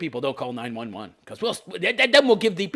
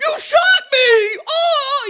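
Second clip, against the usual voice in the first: put-on shocked disbelief, higher and louder; 6 dB louder than usual. Retelling how the man reacted when the cop shot him: imitating a shocked cry. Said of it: "He's so shocked".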